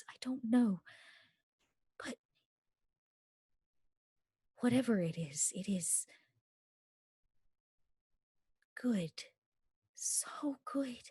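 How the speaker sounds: wispy, awed voice, almost crying. Narrating a scene, the speaker voices her reply, wispy and almost crying. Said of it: "she almost cries saying it, this kind of wispiness in her voice".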